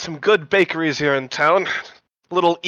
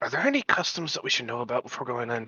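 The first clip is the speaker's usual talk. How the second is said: hushed, very quiet half-whisper; 4 semitones lower, 10 dB quieter than usual. A player half-whispers a question over to Avelina before going in: half-whispering. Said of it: "I'm gonna whisper over to Avelina".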